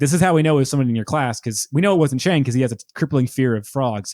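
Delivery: ordinary delivery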